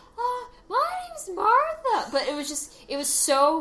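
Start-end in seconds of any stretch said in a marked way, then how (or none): 0.2-2.1 phony girl's voice, pitched way up, fake falsetto. Imitating a boy disguising his voice as a girl, fake high falsetto. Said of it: "raised it a few octaves".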